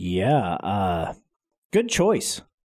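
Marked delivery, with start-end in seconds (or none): 1.7-2.4 high, dripping with sarcasm. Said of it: "Is that sarcasm?".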